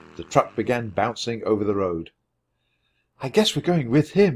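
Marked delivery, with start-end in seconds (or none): 3.2-4.4 whispered, higher pitch. Annie, to Jack as the milkman's truck drives off, whispered. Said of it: "whispered Annie".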